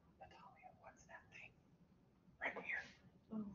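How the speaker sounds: quiet whispered voice.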